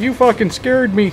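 put-on Canadian accent, very high. Reacting to a scare from the other speaker, in a Canadian accent. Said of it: "Why did I turn Canadian?".

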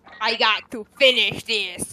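very loud, barked robotic cyborg cop voice. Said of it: "You sound like RoboCop".

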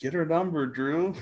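high-pitched, slow, called-out yell. Retelling what someone shouted in the parking lot: imitating David yelling. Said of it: "And I heard David yelling".

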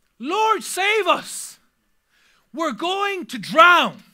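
loud, slow panicked voice.

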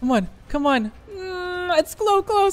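frightened. Waiting out the last seconds in a game, scared. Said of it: "I'm scared. I'm so scared".

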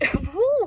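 sudden voice crack on the word. Naming another series by the same artist, speaking with a voice crack. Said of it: "that was a voice crack".

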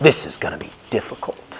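fast, soft, hushed whisper.

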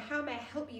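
ordinary delivery, nothing marked

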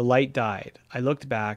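plain

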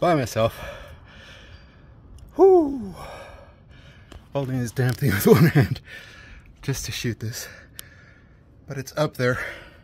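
loud, breathless, puffing and panting between words. Hanging a panel alone while filming with one hand, out of breath. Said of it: "out of breath".

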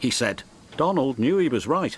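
ordinary delivery

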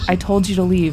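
plain

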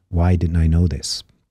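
ordinary delivery

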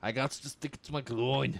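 poorly done put-on Scottish accent. Joking while playing a game with another speaker: bad put-on scottish accent. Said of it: "you are not good at a Scottish accent".

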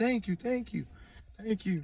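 high, tearful, crying voice. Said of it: "was crying".

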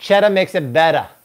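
put-on Boston accent. While cooking with cheddar, speaking in a Boston accent. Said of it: "Look at my Boston accent".

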